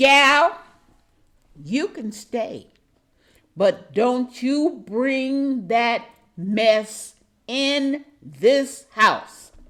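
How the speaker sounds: firm, no-nonsense tone. Retelling what she said when she let the speaker stay: imitating a firm voice. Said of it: "said in a firm voice".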